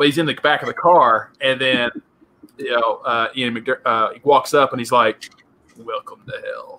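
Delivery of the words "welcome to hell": breathy, hushed emperor-like voice, whispered. Retelling a movie scene, quoting the butler: Emperor Palpatine voice. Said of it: "just the way he says it is just straight up Emperor".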